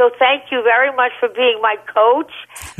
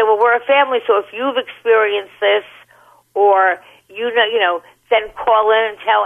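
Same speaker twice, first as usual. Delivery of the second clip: ordinary delivery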